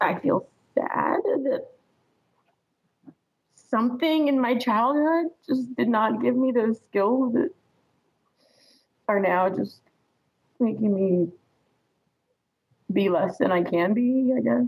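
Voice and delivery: tearful, crying while talking. Answering a question about feelings after saying so: crying while talking. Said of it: "I'm crying and I feel emotional".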